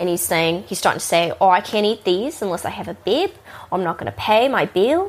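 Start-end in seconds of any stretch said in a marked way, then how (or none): 1.4-5.1 mock stubborn, pushy, insistent delivery. Retelling a customer demanding a bib for wings: imitating a pushy customer. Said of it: "he's being super pushy about it".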